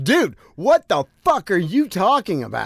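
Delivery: all-out, high, swooping screaming outburst. Retelling a phone call where a man screamed at him, imitating the screaming. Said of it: "And he starts screaming".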